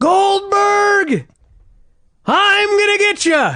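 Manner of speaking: very high-pitched, shrill, taunting scream. Retelling one man screaming at another during his ring entrance, imitating Sid screaming. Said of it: "he begins screaming at Goldberg".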